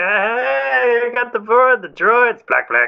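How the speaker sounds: put-on sloppy drunk Italian accent, very high. Describing a character's italian accent, imitating a drunk italian uncle. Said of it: "drunk Italian uncle at the party".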